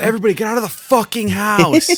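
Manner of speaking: very high, shrill, mock screaming. Retelling a party where everyone was told to leave: Zane screaming, imitated. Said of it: "Zane started to scream at everyone".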